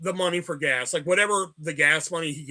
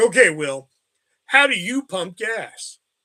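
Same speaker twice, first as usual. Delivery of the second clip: snide, snarky, mocking tone; 6 dB louder than usual. Retelling how she asked about pumping gas: imitating a snarky tone. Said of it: "she got all snarky with me".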